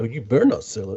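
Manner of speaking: put-on deep, growly, dropped tough voice. Mocking a friend's warning not to sell it: imitating a deep voice. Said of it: "You got a you got a deep voice in that one".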